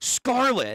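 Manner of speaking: put-on abrupt high-pitched yelling. Retelling what a game character yells, imitating a yell. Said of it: "but she yells".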